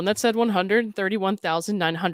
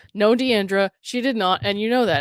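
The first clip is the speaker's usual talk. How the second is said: ordinary delivery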